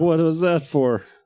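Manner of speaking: very high, out of breath and dazed. Voicing a character just knocked over onto his side, winded and dazed. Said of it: "He looks pretty winded".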